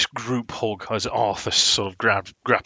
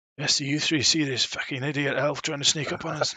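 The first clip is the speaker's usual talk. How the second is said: muttered quietly under breath, much higher; 6 semitones higher, 3 dB quieter than usual. In a game, a character speaks to the three others, under his breath. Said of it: "under his breath".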